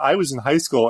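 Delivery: ordinary delivery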